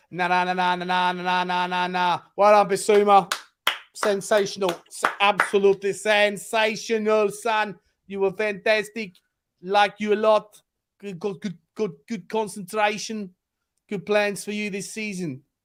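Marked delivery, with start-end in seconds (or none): 2.4-15.4 put-on South African accent all the way through. Speaker praises someone with vodka kicking in, slipping into a south african accent. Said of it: "Why are you doing South African accent".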